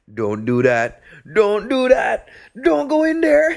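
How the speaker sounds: loud, very high, drawn-out hollering. Retelling a man in the theater yelling during the movie, retelling his yelling. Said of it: "he's just yelling stuff like".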